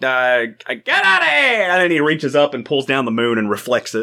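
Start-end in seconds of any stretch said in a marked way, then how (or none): 0.0-1.7 words stretched out in ballgame announcer style. Imagining a scene, speaker voices Bugs as a 1930s baseball announcer. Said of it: "1930s baseball voice announcer".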